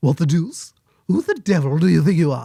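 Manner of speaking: swooping, animated cartoon voice with wide pitch swings. Showing the impression he once fooled people with, doing an okay Stewie impression. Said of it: "I could do an okay Stewie".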